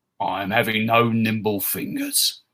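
slow, rough voice like grinding rocks. A narrator reads a lizard man's line to Lett, voice like grinding rocks. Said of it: "[name] was approximately 8 feet tall, lacked any body fat whatsoever, and owned a tail. He was an Analesian, one of the lizard men from the western deserts. ... His voice sounded like rocks grinding".

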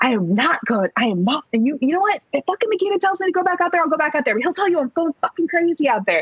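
play-acted high scream, building as it goes. Speaker retells screaming at a man urging them back out, retelling a scream. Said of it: "And I'm screaming at this point".

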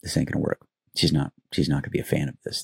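hushed whisper. Retelling what the speaker whispered to someone nearby, retelling a whisper. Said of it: "I'm whispering to Michelle".

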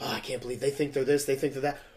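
put-on whispering. Retelling what others said behind people's backs: imitating people whispering. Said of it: "whisper, whisper, whisper".

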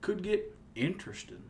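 whispered, breathy Southern drawl on "interesting". Teasing the listener from Pittsburgh about certain words, imitating Southern-sounding pronunciation. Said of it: "all of a sudden you'll say".

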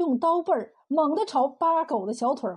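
ordinary delivery

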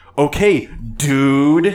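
loud, mocking tone.

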